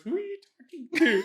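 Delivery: fast, high-pitched delivery.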